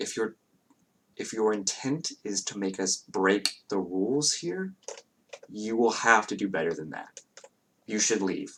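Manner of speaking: very hushed, kept under the breath. A game master voicing an elven woman who comes up to the players, in very hushed tones. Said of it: "in very hushed tones".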